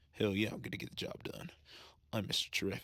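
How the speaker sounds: acted, over-the-top swagger, half-whispered, breathy. Imitating a movie character's confident line with an exaggerated swagger. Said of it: "exaggerated swagger he had".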